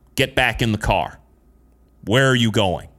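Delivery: ordinary talk, nothing marked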